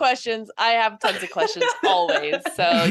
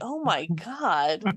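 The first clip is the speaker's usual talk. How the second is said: mock, put-on disgusted tone; 4 semitones lower, 6 dB quieter than usual. Imitating another player's reaction as if in a horror game: imitating a disgusted reaction. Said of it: "there's some disgust in your voice".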